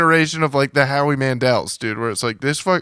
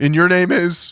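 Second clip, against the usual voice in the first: pointed passive-aggressive delivery; 4 semitones higher than usual. Describing a man's reply when someone introduces himself, in mock passive-aggressive tone. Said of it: "more passive aggressive".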